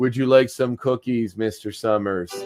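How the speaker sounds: put-on uncanny, eerily polite, well-behaved child voice. Recapping an episode, acting out the children: Village of the Damned child voice. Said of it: "super Village of the Damned here".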